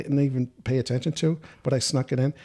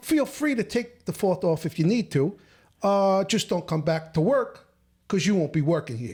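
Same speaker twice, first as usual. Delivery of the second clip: Italian-type boss voice, firm and laying down; 5 semitones higher than usual. Retelling what a manager said, imitating an Italian-type manager. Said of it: "he was like Italian type".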